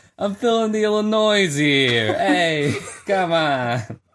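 put-on Brooklyn accent. Joking with the others about Illinois: put-on Brooklyn accent. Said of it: "this kind of Brooklyn accent that y'all just did".

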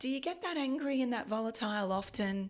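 calm, soothing life-coach voice. Retelling what Marianne said to you, imitating Marianne's calm coach voice. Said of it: "In her calm life coachy sort of voice".

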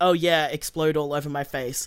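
ordinary talk

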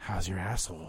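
low, hushed half-whisper, stage whisper, close. Acting out what a woman half-whispered into your ear during a hug, imitating a half-whisper. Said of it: "she whispers into my ear".

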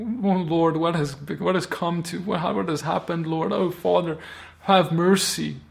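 aching, pleading cry. Retelling Moses on his face before God: imitating Moses crying out to God. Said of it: "he starts crying out".

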